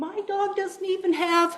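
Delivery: high, slow, angry yelling. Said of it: "already yelling at me".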